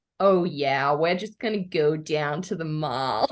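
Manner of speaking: shy, timid put-on American accent.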